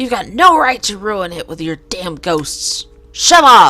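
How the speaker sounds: straining character voice. Performing a scene as Don, Don's strained shouting voice. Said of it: "Don's voice really hurts".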